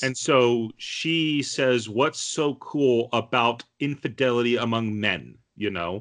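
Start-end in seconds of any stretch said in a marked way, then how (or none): none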